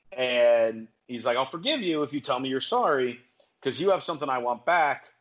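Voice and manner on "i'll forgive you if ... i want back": plain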